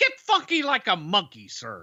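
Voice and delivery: high character voice, pitch lifted up and swung around. Correcting an earlier attempt, the speaker shows how Dusty says it: Dusty impression. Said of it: "He says".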